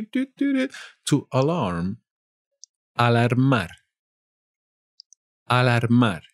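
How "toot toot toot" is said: very high, bell-like toot. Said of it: "Like the notification bell you have down below here".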